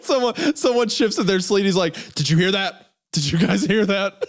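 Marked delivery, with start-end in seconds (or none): 2.1-4.2 put-on panicked voice. Retelling someone's pretend ghost hunt on a plane: imitating someone panicking. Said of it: "panicking and, like, sweating".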